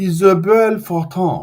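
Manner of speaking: French accent. Host introducing a French Canadian guest by name, in a French accent. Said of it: "you said it a little bit more with a French accent".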